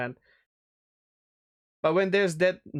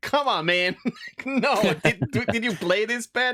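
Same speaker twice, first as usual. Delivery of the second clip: loud high-pitched yelling. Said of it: "I'm gonna yell at my screen".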